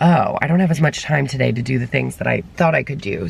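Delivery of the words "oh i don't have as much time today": plain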